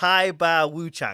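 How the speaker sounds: put-on Chinese accent. Showing how to say Chinese folk religion names, in a put-on Chinese accent. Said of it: "You got to put on the accent".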